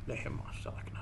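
soft, low whisper under the breath.

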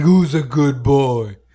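slow voice people use on pets. Showing the voice used when talking to a dog; talking-to-a-dog voice. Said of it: "like a dog voice".

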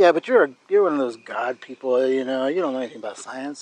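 teasing, playful put-on sarcastic tone. Teasing the other speaker about their science background: playful put-on sarcasm. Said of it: "now that you're being all sarcastic and stuff".

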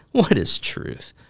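sarcastic, dismissive, high snarky jab. Showing how Pilate might have asked what is truth: snarky. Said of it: "Is it snarky?".

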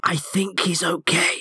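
stage half-whisper, a touch high. Tabletop player replying in character to her, half-whispering. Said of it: "I just whisper back at her".

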